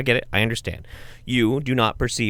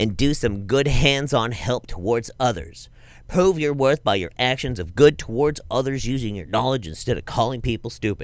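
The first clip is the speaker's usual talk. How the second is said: mock nerdy put-on voice. Acting out an argument about medicine knowledge, the speaker uses his nerd voice. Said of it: "My nerd voice".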